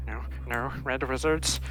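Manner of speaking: quiet muttering under the breath.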